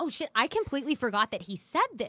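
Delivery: ordinary talk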